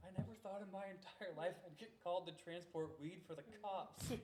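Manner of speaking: mock very loud, high talk through laughter. Retelling what the tow truck driver said on arriving; retelling talk through laughter. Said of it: "he just starts laughing. He's like".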